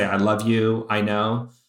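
ordinary talk, nothing marked

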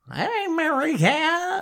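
put-on very high, loud, swooping old man voice. Imitating the narrator's old man voice for Uncle Julian: Uncle Julian old man voice. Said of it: "this old man".

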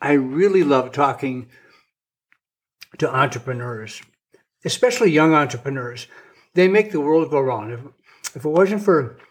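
words mushed, talking with mouth full. Speaker eating a brownie and cookie mid-monologue, talking with mouth full. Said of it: "sorry that I got so much stuff in my mouth".

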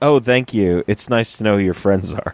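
quick, sarcastic, tongue-in-cheek jab. Recapping a scene they enjoyed, quoting Romana, mock-sarcastic as Romana. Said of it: "the sarcastic line from Romana".

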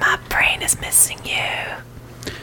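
put-on whisper with a joking tone. Asking Quinn to whisper back: joking whisper. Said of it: "whisper back to me".

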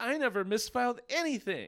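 mock, very high, childish, petulant tantrum yell. Retelling a man blaming his psychiatrist, mock petulant yell. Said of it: "puts his hand on his hips and yells".

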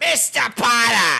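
put-on shrill shouting comic voice. Joking about a different actor playing Snape: Gilbert Gottfried as Snape, yelling. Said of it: "Gilbert Gottfried should have played Snape".

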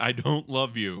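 slow, impatient, dismissive brushing-off tone. Acting out a phone call as the husband who has no time for his wife: acting a dismissive husband. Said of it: "this husband has zero time for her bullshit".

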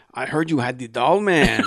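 bad put-on Spanish accent. Retelling a lady who came over, voicing her in a terrible stereotypical spanish accent. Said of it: "I don't know how to do a Spanish accent, but I'm going to do it anyway".

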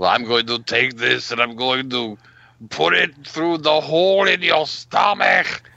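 loud, threatening action hero yell. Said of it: "Arnie was yelling at Richard Dawson".

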